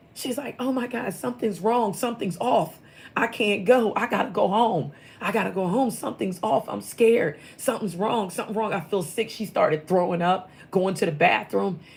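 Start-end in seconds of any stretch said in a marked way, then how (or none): 0.6-9.3 put-on panicked delivery, pitched higher. Retelling someone's panic attack at the airport: imitating someone panicking. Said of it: "she went into a panic attack".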